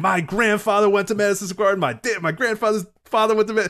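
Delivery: very high, indignant, raving rant. Retelling what an usher at a wrestling show said: imitating a ranting usher. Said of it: "he's just ranting".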